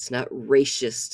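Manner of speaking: mocking tone, heavy stress on "not".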